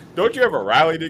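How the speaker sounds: put-on Southern accent. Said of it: "I talked to my Southern accent".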